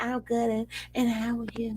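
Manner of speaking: soft, sultry, put-on sexy voice. Someone announces that she now does the sexy voice; answer in a put-on sexy voice. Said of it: "she now she does the sexy voice".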